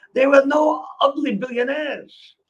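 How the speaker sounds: put-on clumsy French accent. Quoting what a woman friend said in a French accent, attempting a French accent. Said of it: "she said to me with this French accent".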